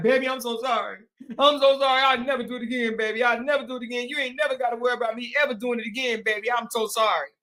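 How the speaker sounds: grovelling, begging, pleading apologetic tone. Imitating a cheating husband apologizing to his wife: imitating a husband begging forgiveness. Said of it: "he looked like the type that'd be like".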